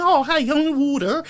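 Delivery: put-on American Yankee accent, pitched very high. Mocking people who fake an accent after traveling: imitating a fake American accent. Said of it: "they travel overseas for two days and they start yanking".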